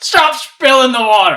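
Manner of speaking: barked drill sergeant yell, very high-pitched and very loud. Game master voicing a sergeant yelling at a man running off, sergeant yelling. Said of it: "yell out to him".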